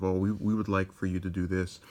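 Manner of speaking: ordinary delivery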